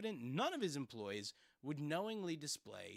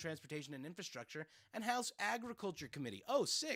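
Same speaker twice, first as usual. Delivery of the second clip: normal talking voice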